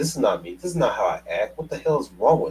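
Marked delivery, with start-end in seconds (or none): none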